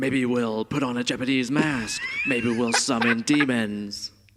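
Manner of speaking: slow, drawn-out, swooping put-on character voice. Quoting what Frank would say, done in the Frank voice. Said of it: "in the Frank voice".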